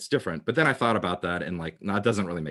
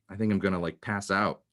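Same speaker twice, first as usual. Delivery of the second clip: ordinary delivery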